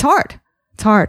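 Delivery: voice quavering, trembling and shaky. Speaking openly about sharing personal views despite offending people: voice shaking. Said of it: "You can hear my voice shaking".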